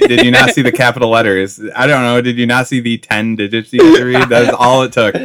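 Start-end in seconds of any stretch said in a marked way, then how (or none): none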